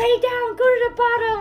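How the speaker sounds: high-pitched shout. Retelling how the jet ski guy yelled instructions at them; retelling a yell. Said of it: "he was like literally yelling".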